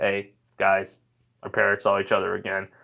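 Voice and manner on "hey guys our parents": ordinary delivery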